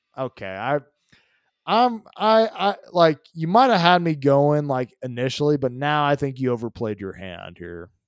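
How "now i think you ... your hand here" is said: normal talking voice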